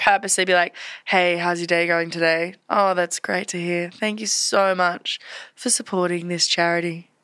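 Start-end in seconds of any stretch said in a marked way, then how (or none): 1.0-7.0 low, husky voice. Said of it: "I would go husky".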